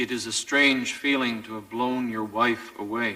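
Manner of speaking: ordinary talk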